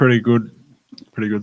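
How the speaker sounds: talking with a mouth full of crunching ice. A podcast guest answers the host's greeting, talking with a mouthful of ice. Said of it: "I just decided to take a mouthful of ice".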